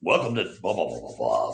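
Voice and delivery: straight, low radio announcer voice, rattled off. Discussing voices in podcasting, demonstrating a straight announcer voice. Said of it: "the that announcer kind of voice".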